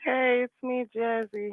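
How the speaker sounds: groggy, soft, sleepy, fresh-out-of-bed voice. A caller greets the hosts on a call-in line, sounding like just woke up. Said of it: "You sound like you just woke up".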